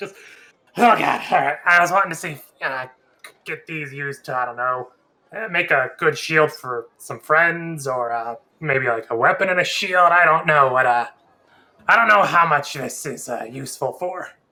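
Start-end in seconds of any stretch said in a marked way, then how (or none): 0.0-1.6 straining hard with great effort. A character pulling two horns off his back, straining with great effort. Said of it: "with a little bit of, like, great effort".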